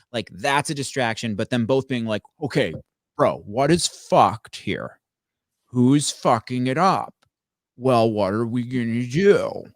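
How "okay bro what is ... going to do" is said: slow, drawn-out horror-villain, movie serial-killer voice. Acting out two people talking a problem through, Buffalo Bill voice. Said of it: "you sound like Buffalo Bill from Silence of the Lambs".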